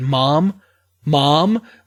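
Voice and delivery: put-on panicky voice. Retelling a painful phone call to a listener, reenacting how they called out to their mother. Imitating a panicky voice. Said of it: "my mother trying to hold back tears".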